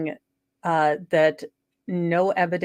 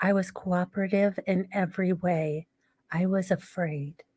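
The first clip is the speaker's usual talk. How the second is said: put-on tiny baby voice, quieter; 5 dB quieter than usual. Imitating how she might speak: imitating a tiny little baby voice. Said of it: "she's going to use her tiny little baby voice".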